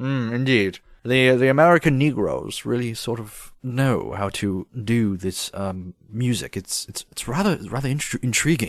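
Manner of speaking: put-on very posh British accent. Joining a bit about sounding like a british person, very posh british accent. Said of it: "it's very posh".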